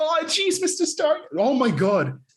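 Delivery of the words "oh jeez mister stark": tiny, very high, slow stuttering voice. Joking about a comedian's Spider-Man bit, Morty-style tiny stuttering voice. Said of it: "He sounds like a tiny stuttering".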